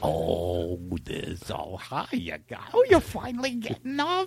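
very low, slow, laid-back, cool, swooping delivery. Speaker describes waking up to them greeting, imitating their greeting voice. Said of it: "I'll do their voice like".

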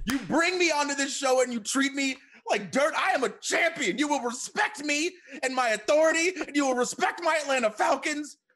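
mock outraged, wrestler-style ranting voice.

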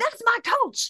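shrieked, very high-pitched scream. Telling the person whose Twitter post they saw, retelling a scream. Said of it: "and I screamed".

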